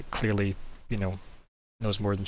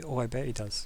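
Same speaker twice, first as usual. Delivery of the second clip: quiet aside muttered under the breath; 3 semitones higher, 9 dB quieter than usual. Voicing a character reacting to the party: muttering under her breath. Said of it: "You hear her say under her breath".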